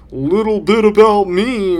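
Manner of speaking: very high, very loud, drawn-out sarcastic voice. Comedian mocking his own bits about himself, put-on sarcastic voice. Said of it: "in this fucking sarcastic voice".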